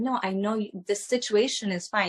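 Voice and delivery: ordinary talk, nothing marked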